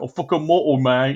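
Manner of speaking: thick, heavily laid-on put-on cockney accent. Imagining chimps brawling and shouting at each other: thick cockney accent. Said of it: "the fucking most cockney accents".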